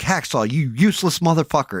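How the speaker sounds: put-on loud, high-pitched raging outburst. Retelling a game session, imitating his own past raging at a teammate. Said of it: "And I start going off".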